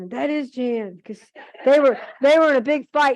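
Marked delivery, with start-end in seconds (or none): 0.1-1.0 play-acted, emphatic, called-out exclamation. Retelling a neighbor calling to her husband: imitating someone yelling. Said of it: "she yells to her husband".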